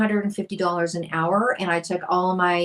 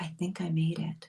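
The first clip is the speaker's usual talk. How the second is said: very quiet, soft, almost under the breath; 10 dB quieter than usual. Retelling what was said to a friend on the phone: retelling a quiet remark. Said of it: "And I said it really quietly".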